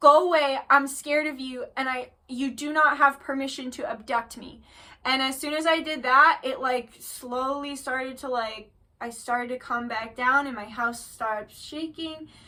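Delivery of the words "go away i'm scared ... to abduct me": ordinary talk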